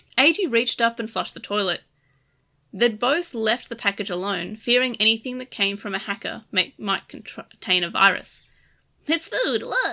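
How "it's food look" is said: cheerful, pleased, bright voice, pitched up. Narrator reading Lugamon's line to Eiji, happy.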